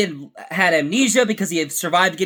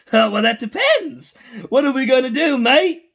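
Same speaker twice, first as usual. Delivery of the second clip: goofy cartoon voice, pitched a bit higher; 6 semitones higher than usual. Comparing how a clone character sounds now with before: goofy Trigger voice. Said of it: "goofy sounding".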